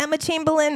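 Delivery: shaky, high, rough voice, only half landing. Giving a red carpet take on someone, Joan Rivers voice. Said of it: "I gotta work on my Joan voice".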